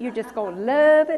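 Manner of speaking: Tennessee-sounding accent and delivery. Speaking to listeners, sounding like a little granddaughter from Tennessee. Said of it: "I just sounded like my little granddaughter in Tennessee".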